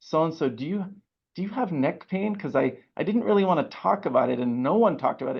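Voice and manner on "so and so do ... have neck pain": quiet, hushed, sheepish stage whisper. Retelling a question to a past president: imitating own half-whisper. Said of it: "I kinda whispered to, to him".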